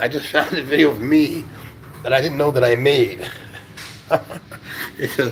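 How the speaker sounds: talking while holding back laughter mid-sentence. Telling about a video of themself they just found, holding back a laugh. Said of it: "I'm trying so hard not to laugh".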